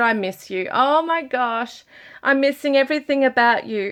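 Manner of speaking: on the verge of tears. Reading a message from the spirit world aloud, on the verge of tears. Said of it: "I want to cry".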